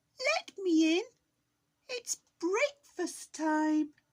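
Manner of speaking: very high, loud, squeaky voice. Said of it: "squeaked the wolf".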